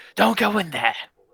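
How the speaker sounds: very high, shrill, loud scream. Voicing a priest as the others gather around his door: screaming. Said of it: "he screams".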